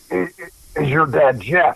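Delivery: gravelly, drawn-out delivery. Retelling how Randy reacted when you introduced your friend Dale Torborg, in a gravelly Randy voice. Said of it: "in that gravelly voice".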